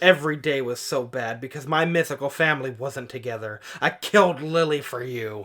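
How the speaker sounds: ordinary talk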